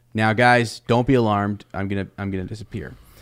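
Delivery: normal talking voice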